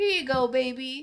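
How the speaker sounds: friendly Southern way of talking. Retelling being served coffee in North Carolina: imitating Southern server's speech. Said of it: "they were like".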